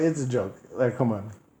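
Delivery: normal talking voice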